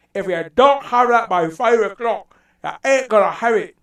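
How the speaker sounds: very loud put-on Scottish accent, high-pitched. Speaker demonstrating a saying in the Scottish accent. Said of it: "you know the Scottish accent".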